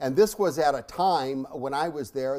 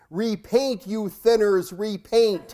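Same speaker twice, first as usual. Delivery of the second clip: mock thunderous voice, loud, high and booming; 7 semitones higher, 6 dB louder than usual. Telling a joke in a homily, voicing the sky in a booming voice. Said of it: "this booming voice from out of the sky says".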